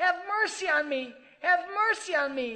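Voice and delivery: high, loud desperate cry.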